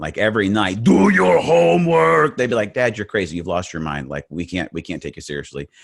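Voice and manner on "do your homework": exaggerated put-on Austrian accent, very high, loud. Imagining raising his three boys, bad Arnold Schwarzenegger Austrian accent. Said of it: "if I'm doing a bad Arnold Schwarzenegger".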